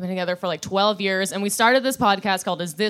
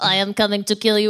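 put-on robot voice; 3 dB louder than usual. Guessing how Chappie the robot sounds: Chappie robot voice. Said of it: "Chappie the robot being like".

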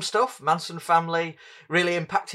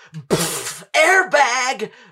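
acted, high, loud little kid's shout; 6 semitones higher, 5 dB louder than usual. Retelling a toddler copying a film gag: imitating a toddler shouting. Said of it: "he shouts at people".

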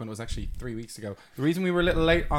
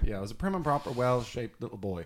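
plain

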